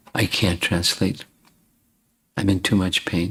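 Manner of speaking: quiet, soft delivery. Retelling what someone in great pain said, in a soft voice. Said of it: "said in a soft voice".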